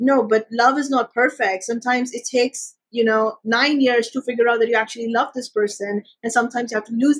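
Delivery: ordinary talk, nothing marked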